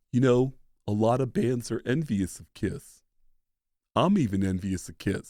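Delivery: soft put-on offstage voice. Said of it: "who's a little bit softer when he's off stage".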